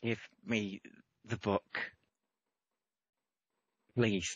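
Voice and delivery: hushed whisper under breath. Game narrator voicing a figure staring Orion down for the book, whispering under breath. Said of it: "they just sort of whisper under their breath".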